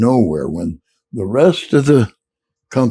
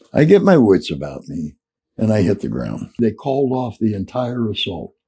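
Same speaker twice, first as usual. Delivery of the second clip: ordinary talk, nothing marked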